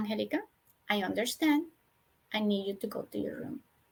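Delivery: very quiet, soft, yet firm voice. Speaker showing how they tell a girl to go to her room, very soft, very firm. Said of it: "So very soft, very firm".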